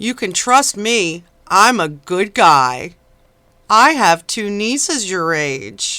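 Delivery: syrupy, sugary-sweet, overly sweet voice. Mimicking a man reassuring Rhoda, in a mock-saccharine voice. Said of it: "Listen to his saccharine voice".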